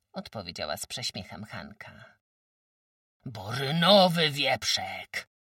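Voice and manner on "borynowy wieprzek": sudden angry outburst. Narrator reads a man who can no longer hold back his anger, bursting out in anger. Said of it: "wybuchnął naraz, nie mogąc już powstrzymać złości".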